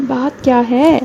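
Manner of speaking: quiet, hushed voice. A narrator voices the candidate, just told to speak low, saying this softly. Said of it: "आहिस्ता से".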